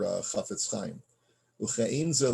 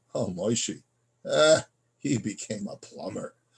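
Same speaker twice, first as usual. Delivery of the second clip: snide, disparaging, belittling, dismissive tone. Explaining lashon hara, showing how a remark sounds with disparaging, belittling inflection. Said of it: "you say it in that kind of inflection".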